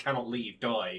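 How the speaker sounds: normal talking voice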